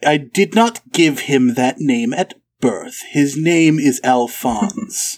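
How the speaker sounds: haughty, condescending tone. Voicing Lady LaRue correcting a guest about her son's name: condescending noble lady. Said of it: "rolls her eyes in the most condescending way she can".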